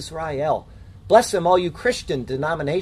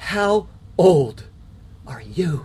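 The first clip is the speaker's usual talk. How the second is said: very slow, acted, awestruck, astonished tone. Teaching a Bible passage, voicing Pharaoh speaking to Jacob: acting out Pharaoh's astonished awe. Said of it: "Each word was uttered in astonished awe".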